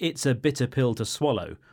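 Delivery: ordinary talk, nothing marked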